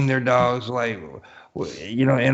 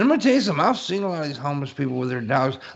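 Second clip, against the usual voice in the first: ordinary delivery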